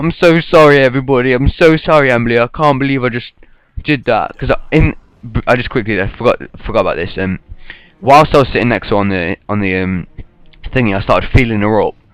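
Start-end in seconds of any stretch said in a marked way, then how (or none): 0.0-4.4 put-on drunken sobbing and crying, pitched higher. Retelling a drunken apology to a friend, imitating own drunk crying. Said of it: "so I start crying my eyes out at this point".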